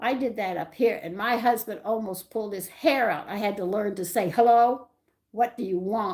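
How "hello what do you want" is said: mock, loud, rude, put-on tone. Showing the phone greeting a husband insisted on, in a mock-rude phone greeting. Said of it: "real, real rude".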